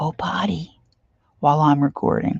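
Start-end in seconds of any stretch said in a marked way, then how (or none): 0.0-0.8 whispered. Retelling what he said at the slider door while recording: imitating a whisper. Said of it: "he whispers".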